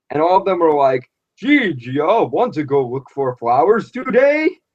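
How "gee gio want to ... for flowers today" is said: slow, mechanical, robot-like delivery. Imitating the show's other actors delivering a line: imitating robotic acting. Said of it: "they just talked very robotically".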